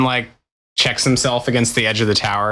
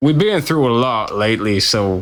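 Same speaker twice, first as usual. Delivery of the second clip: sudden drop into a low bass voice. Explaining that he's a little upset: lower bass voice. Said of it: "you dropped like a lower to like a lower bass all of a sudden".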